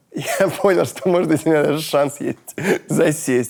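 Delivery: high-pitched, laughing through the words. Recounting a conversation he had, laughing. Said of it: "(смеясь)".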